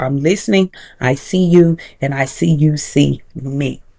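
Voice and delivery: ordinary delivery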